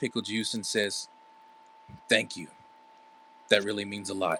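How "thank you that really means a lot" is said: smiling gently, much quieter, faster. August answers Pickle Juice after hearing his sister would be proud, said with a soft smile. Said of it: "gives a soft smile as he nods".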